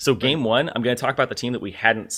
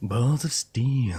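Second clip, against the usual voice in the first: put-on movie-trailer voice. Asked about the voices they do, the speaker does movie guy meets Duke Nukem. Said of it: "somewhere between the movie guy and Duke Nukem".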